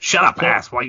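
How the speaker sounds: put-on loud, high, dopey cartoon teenager voice. Taking turns at cartoon impressions, one speaker does a Beavis and Butthead impression. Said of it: "that was way fucking better than I could ever do".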